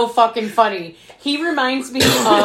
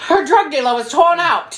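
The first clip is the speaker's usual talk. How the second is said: thick put-on English accent, pitched up; 6 semitones higher, 3 dB louder than usual. Quoting a line from the film: heavy english accent. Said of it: "In that heavy accent".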